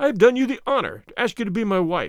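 ordinary delivery

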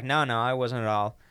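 usual speaking voice

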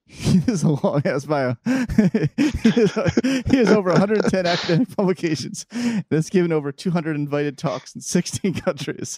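giggling through words. Reading out a guest's long bio, laughing while talking. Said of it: "Sorry, sorry, I'm laughing".

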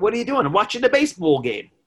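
put-on loud, fast, rattled-off New York accent. Speaker imitating how a man from New York talks, with a New York accent. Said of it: "He talks like this. He's from New York".

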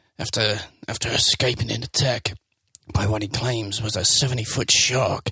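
mock low London cockney voice. Asked to read the film synopsis, trying it as Statham in a deep Cockney accent. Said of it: "I don't know if I can do a deep Cockney accent".

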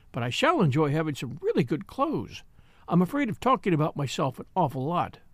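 plain

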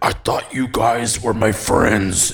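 eerie, low possessed-sounding voice. Reading a story, the narrator voices a runaway friend, just caught, in a low possessed voice. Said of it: "in a low, possessed voice".

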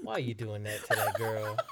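acted-out, let-down, disappointed parent tone. Retelling mom's reaction to a date with another girl: imitating mom sounding disappointed. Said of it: "my mom would sound, like, disappointed".

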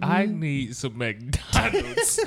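normal talking voice

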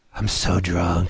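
soft, hushed half-whisper, stage whisper. Retelling how someone leaned on a shoulder at a booth: imitating a half-whisper. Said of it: "He whispers in my ear".

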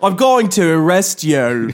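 bad, unconvincing put-on Australian accent. Trying out an australian line suggested by the other speaker, in a bad australian accent. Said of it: "I don't think I'm doing it very".

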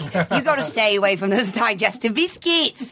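slow, drawled-out, bad New Zealand accent. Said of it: "That was a terrible New Zealand accent".

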